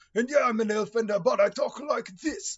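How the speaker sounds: put-on very high, loud, strong Russian accent. Recalling a fellow player introducing his elf character, imitating his strong accent. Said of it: "he had some strong accent".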